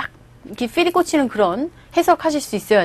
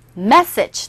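"message" with stressed first syllable and short ending. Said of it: "따라해보세요".

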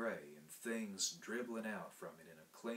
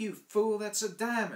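very high, very loud, shrill squeaky voice; 12 dB louder than usual. A woman scolding the narrator, who threw the stone down, squeaking. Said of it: "she squeaked at me".

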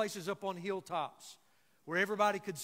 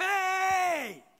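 put-on very high, stretched, drawn-out kid's yell; 11 semitones higher, 7 dB louder than usual. Retelling a story of a boy in right field: retelling a kid yelling. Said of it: "he just starts yelling".

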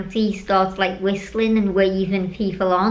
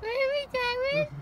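high-pitched, squeaky shriek. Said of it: "My little squeaky scream voice".

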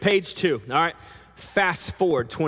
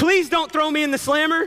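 really begging and pleading in a very high voice; 10 semitones higher than usual. Playing the servant in a group storytelling, begging and pleading. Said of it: "I mean really begged and pleaded".

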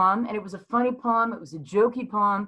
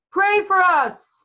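very high, very loud, top-of-the-lungs scream; 11 semitones higher, 7 dB louder than usual. Recalling what the group all screamed out together, retelling a loud scream. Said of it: "scream out at the top of our lungs".

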